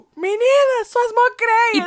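play-acted, very high, shrill, loud hollering. Telling a friend how a man shouted at them on the Norte Sul: retelling a shout. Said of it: "Ele gritou no meio da Norte Sul".

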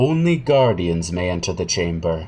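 very deep, low guardian-like voice. Game master voices a suit of armor blocking the door, as the armor speaking. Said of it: "the suit of armor steps between you and the door and says".

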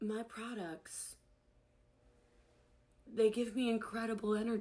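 acted, very hushed, lifeless, flat, unenthused monotone. Imitating a seller who claims great energy: imitating a flat, low-energy delivery. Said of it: "And you say it like this".

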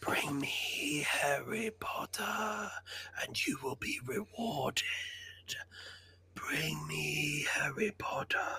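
very slow, drawn-out, hushed whisper. Quoting the whisper part of a villain's line: whispered Voldemort voice. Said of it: "the whisper part in Deathly Hallows".

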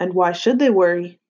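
ordinary delivery

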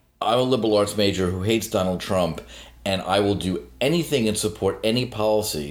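normal talking voice

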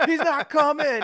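very high, loud, flipped-out holler. Retelling yelling while friends told them to shut up: retelling a yell. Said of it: "I was like yelling".

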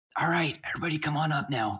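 imitated whisper. Retelling how a woman higher up the wall called everyone up, imitating her whisper. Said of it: "she basically kind of like whispers".

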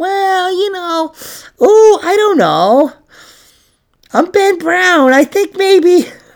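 a little skeptical, very high, slow doubtful musing. Imitating the other speaker's reaction to a conspiracy: imitating Ben Brown, mock skeptical. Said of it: "a little skeptical".

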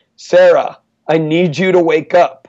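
deliberate, pointed, loud, slow call-out. Retelling waking a sleeping student from across the room, in a loud voice. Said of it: "in a loud voice from across the room".

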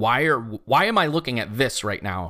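normal talking voice

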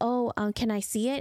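normal talking voice

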